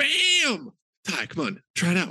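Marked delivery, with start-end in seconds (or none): 0.0-0.7 full-throated, wild, high, swooping scream. Urging ty to come on and try it out, screaming. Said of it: "why are you screaming it over and over?".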